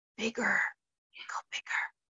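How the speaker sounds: soft, hushed, breathy whisper. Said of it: "the universe is leaning over and whispering".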